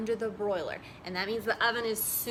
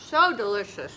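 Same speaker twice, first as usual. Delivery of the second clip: speaking while chewing, mouth full. Trying honeycomb for the first time, talking with mouth full. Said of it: "I'm talking with my mouth full".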